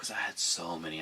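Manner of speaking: usual speaking voice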